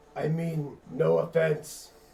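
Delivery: guttural orc creature voice. Answering a friendly Orcish greeting, the player replies in a guttural Orcish voice. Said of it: "with my own guttural version of uh, Orcish".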